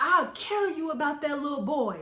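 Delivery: put-on loud yell. Recounting a phone call, imitating the man on the line yelling louder. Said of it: "he starts yelling louder".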